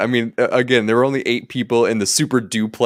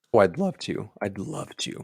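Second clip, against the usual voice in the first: very hushed, very quiet voice that breaks and cracks; 2 semitones lower, 10 dB quieter than usual. Agreeing to kick off the review: voice cracking a little. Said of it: "My voice cracked a little bit there".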